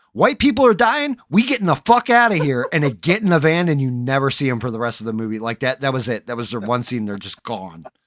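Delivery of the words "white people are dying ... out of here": put-on shrill, frantic, high, loud panicked reporter voice. Retelling a movie scene, imitating a reporter on the mic.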